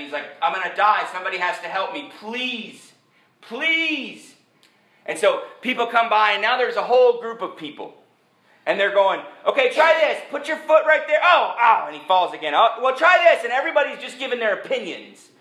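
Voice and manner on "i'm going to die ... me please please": put-on exhausted, breathless pleading tone, slower. Retelling how Charlie, failing to climb out, begged for help, imitating exhausted pleading. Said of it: "he's out of water and he's out of breath".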